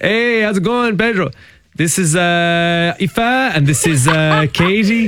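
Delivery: deliberate, simplified broken English speech. Retelling introducing friends from home to the guys at the pub, in broken english. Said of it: "talking in this kind of broken English".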